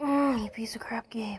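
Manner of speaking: fed-up, frustrated, angry outburst. Losing at a game that is too hard: mad at the game. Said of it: "I'm getting really mad at this game".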